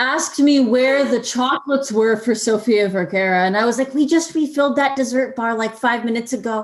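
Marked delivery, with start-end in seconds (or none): none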